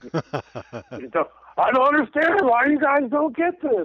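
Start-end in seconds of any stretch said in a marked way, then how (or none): 1.6-3.8 high, loud shout, totally breaking down. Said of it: "He's totally breaking down".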